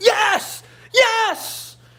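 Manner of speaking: very high, fervent, excited yelling. Retelling the man behind him who had yelled at him earlier, imitating excited shouting. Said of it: "And he starts shouting again".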